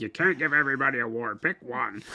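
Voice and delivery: angry, cross, scolding voice. Retelling what Jen says about awards: imitating angry Jen. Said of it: "your angry Jen impersonation".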